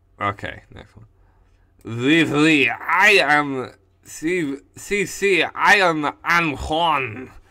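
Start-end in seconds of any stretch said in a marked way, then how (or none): 1.9-7.3 fake Spanish or French accent, much louder, slower. Introducing a made-up character to cc in a bad spanish or french accent. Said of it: "Am I doing a bad Spanish accent or a bad French accent?".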